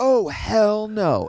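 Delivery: shrill, very high-pitched acted-out yell. Recounting a squirrel found on the couch, speaker retells how someone yelled. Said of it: "And Liz yelled".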